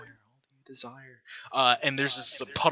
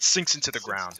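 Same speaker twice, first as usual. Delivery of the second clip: ordinary talk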